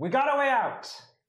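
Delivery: very high, all-out, full-volume shout. Calling out to the others in character: shouting as loud as possible. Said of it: "I will shout out as loud as I can".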